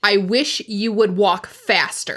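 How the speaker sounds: said very clearly and loudly. Voicing a character as an old man slowly blocks the road: said very clearly. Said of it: "you do hear my voice very clearly say".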